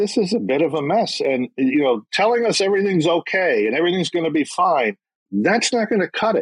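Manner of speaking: exasperated frustration. Answering an interviewer about jockeys sanctioned under crop rules: frustrated. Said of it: "you sound frustrated".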